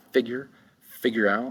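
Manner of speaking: stress on first syllable of figure. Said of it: "the accent's gonna be the first syllable".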